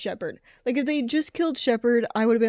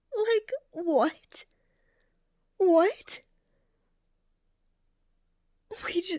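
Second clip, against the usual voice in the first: high-pitched, tearful, upset, right on the verge of tears; 8 semitones higher than usual. Reacting to someone throwing away their characters, upset and about to cry. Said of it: "I'm legit about to start crying".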